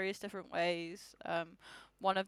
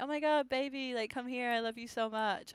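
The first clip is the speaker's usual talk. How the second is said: exaggerated mock gushing, higher; 4 semitones higher than usual. Retelling what a woman said during a meeting, over-the-top gushing imitation. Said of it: "she's super over the top, being like".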